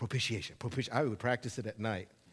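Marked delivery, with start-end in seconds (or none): 0.0-0.9 very fast rapid-fire repetition, lower and quieter. A preacher shows listeners how he learned to say a word, said really fast. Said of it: "learn how to say that really fast".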